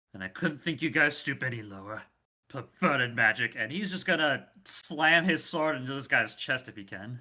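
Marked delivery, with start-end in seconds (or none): 0.2-3.5 muttering, mumbling, lower in pitch. Player voicing his character's words to the cultists, muttering. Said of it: "and mutters".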